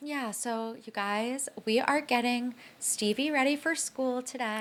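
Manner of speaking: soft, hushed, eerily calm voice. Imitating Avery Woods's new way of talking: calm and soft-spoken. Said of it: "this creepily calm disposition and being really soft-spoken".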